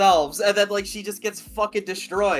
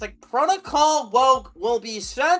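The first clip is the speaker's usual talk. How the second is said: put-on female voice; 3 semitones higher, 3 dB louder than usual. Repeat the protocol announcement that was just made in her voice, imitating her voice. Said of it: "it just said in her voice".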